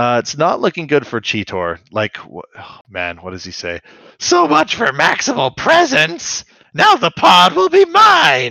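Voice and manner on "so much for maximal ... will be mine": throat-straining villain voice, much higher and louder. Recounting a fight scene, quoting what the character says: Terrorsaur voice. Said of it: "I hate doing his voice".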